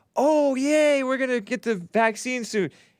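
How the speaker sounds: put-on overjoyed little kid voice, very high, excited. Retelling a video of a kid with a parent: imitating an excited emotional child. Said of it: "The kid was so excited and emotional".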